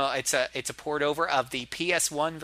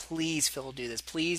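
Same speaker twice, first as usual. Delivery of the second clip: put-on pleading, much quieter; 5 dB quieter than usual. Speaker acts out someone from the message boards begging at the studio door, imitating pleading. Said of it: "there they were pleading on the ground".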